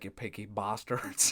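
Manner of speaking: put-on Irish-accented voice. Showing how friends imitate a TV character: Irish copper's accent. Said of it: "the Irish copper's accent".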